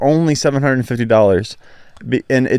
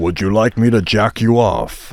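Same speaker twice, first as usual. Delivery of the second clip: put-on villain voice; 3 semitones lower than usual. Voicing a Treebeard toy for a friend: Megatron voice. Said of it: "That sounds too rough".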